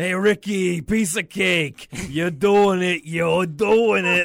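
put-on very loud, drawn-out, real New York accent. Quoting a character cheering Ricky on in a New York accent like Vinny's. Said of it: "sounds like Vinny from Giant Bomb when he puts on the real New York accent".

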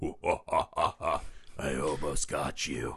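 slow, breathy whisper, breathed out. Retelling the devil taunting in a film scene, imitating the devil voice. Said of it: "I really love the devil voice".

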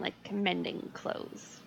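very slow, whispered. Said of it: "Did you just say that really slow?".

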